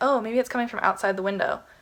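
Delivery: ordinary delivery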